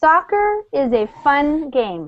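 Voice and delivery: slow, deliberate reading, one word at a time. Reading a short passage aloud once, at a slow reading pace. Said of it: "I'll read it once slowly".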